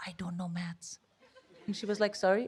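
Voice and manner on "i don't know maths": barely audible, confiding whisper. Recalling a job interview, telling a sympathetic interviewer the truth, retelling a whisper. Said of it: "I literally started whispering".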